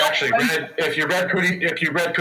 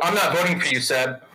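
normal talking voice

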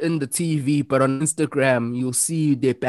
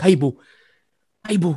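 put-on soft-spoken voice; 2 semitones higher than usual. Imitating how The Undertaker really talks: imitating his soft-spoken voice. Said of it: "he's so soft spoken".

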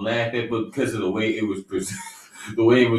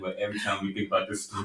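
very hushed voice, giggling and laughing through words; 3 semitones lower, 10 dB quieter than usual. Telling a story to listeners and apologizing, unable to stop laughing. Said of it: "I can't stop laughing".

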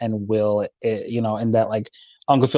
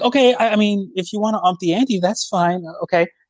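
put-on naive voice, higher pitch; 10 semitones higher than usual. Retelling a scene where Uncle Phil runs a hustle, Uncle Phil's high naive voice. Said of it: "putting on that like high pitched, like naive innocent voice".

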